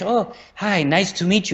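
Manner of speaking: breathy gentle woman's voice. Imitating Spanish women heard on the street: soft breathy Spanish women's voice. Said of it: "a softness to their voice".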